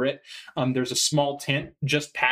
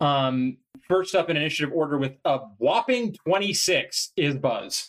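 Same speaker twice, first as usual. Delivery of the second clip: plain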